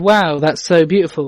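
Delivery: heavily sarcastic, dry, mocking. Reading Mary's line on seeing Cornwall for the first time: sarcastic. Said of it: "I made that come across a lot more sarcastic than the line has".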